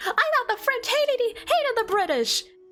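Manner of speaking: put-on screaming character voice. Imagining two characters yelling at each other, Venti screams at the other. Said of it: "Venti just screams like".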